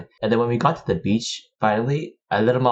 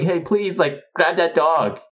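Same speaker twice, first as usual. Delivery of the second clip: high-pitched loud yell; 7 semitones higher than usual. Retelling chasing a runaway dog up the stairs, calling to people, retelling a yell. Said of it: "I was yelling at people like".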